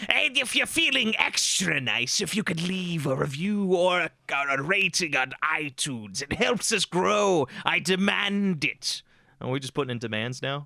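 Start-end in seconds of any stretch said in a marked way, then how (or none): 0.1-9.0 very slow, put-on goblin voice. Podcast host asking listeners for reviews and ratings, in a goblin voice. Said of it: "I should put on a goblin voice too".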